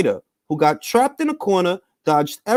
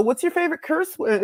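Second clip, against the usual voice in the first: put-on higher-pitched girl's voice; 6 semitones higher, 5 dB quieter than usual. Retelling a question from a TikTok clip: imitating a girl's voice. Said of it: "it's literally a girl's voice".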